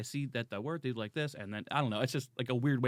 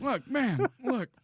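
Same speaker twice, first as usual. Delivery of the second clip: put-on very high, elderly politician old-man voice; 11 semitones higher, 3 dB louder than usual. Trying an impression of the old president: Biden impression. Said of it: "he's so old, I can't do it".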